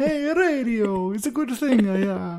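high, loud, thick, exaggerated put-on Italian accent. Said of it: "That's my Italian accent".

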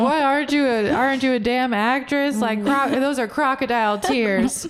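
put-on mocking tone. Retelling how he mocked the speaker's crying, imitating someone mocking. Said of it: "he'd even mock me".

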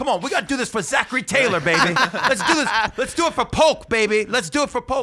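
put-on pep-rally cheering. Showing how he pumps up a crowd for Presidents Day, putting on cheerleader hype. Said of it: "I'm like a cheerleader".

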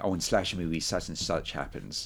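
ordinary delivery

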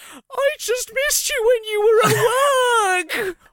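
mock sobbing voice, very high and very slow. Retelling hugging dad after being caught, imitating own past crying. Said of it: "while I was crying, I ran over to him and hugged him and went".

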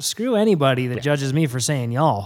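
ordinary delivery

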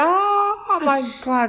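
mock very high, drawn-out pained scream on long "oh". Retelling being injected with oil by a friend, retelling own scream. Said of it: "And I screamed".

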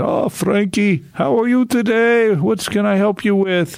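put-on foreign Eastern accent, pitched very high. Speaker recalls a foreign doctor greeting him, imitating Dr. Wicked Hand's Eastern accent. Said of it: "he had this Eastern accent".

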